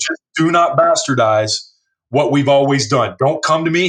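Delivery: ordinary talk, nothing marked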